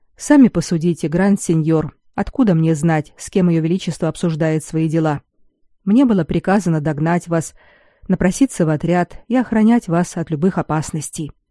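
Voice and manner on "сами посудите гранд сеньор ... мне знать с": ordinary delivery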